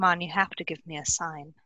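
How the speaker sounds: very quiet, hushed, said softly under the breath. Pleading in character for a sign: said very quietly. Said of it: "I am going to say very quietly".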